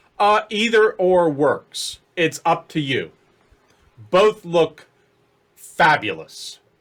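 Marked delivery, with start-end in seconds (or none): 5.6-6.6 strong stress on the word "fabulous". Answering the DM about the look without the wig, stress on 'fabulous'. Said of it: "Emphasis on the word".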